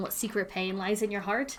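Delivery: ordinary delivery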